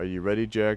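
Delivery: ordinary delivery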